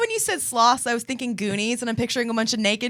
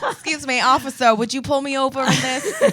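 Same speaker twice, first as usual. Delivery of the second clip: heavy, laid-on put-on Brooklyn accent. Acting out a FaceTime call to 911 before a date, thick Brooklyn accent. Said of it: "thick Brooklyn accent".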